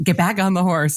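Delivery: put-on urgent, insistent instructor voice, repeated. Retelling a riding teacher's repeated order after a fall: imitating someone yelling. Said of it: "was just yelling".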